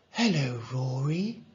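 ordinary talk

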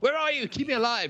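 put-on very British accent, cried out high.

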